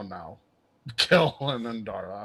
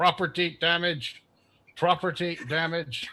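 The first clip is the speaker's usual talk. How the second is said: high, tinny, metallic mechanical machine voice; 6 semitones higher than usual. Voicing a voice heard in the background: metallic voice. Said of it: "some metallic voice in the background say".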